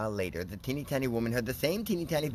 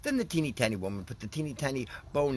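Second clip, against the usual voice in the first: ordinary delivery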